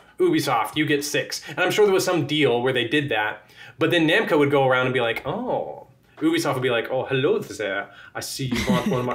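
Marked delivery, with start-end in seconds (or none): 6.9-9.2 clumsy, bad put-on French accent. Imagining game companies dealing over slots, Ubisoft in a bad French accent. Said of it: "I can't do a French accent".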